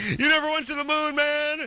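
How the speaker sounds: high-pitched yell in a hippie voice. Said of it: "hippie yelling".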